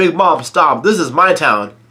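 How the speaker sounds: usual speaking voice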